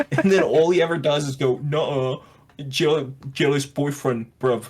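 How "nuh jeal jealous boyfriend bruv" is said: mocking put-on American accent. Mocking how Andrew Tate denies the evidence: imitating Andrew Tate, American accent. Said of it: "he says it with an American accent".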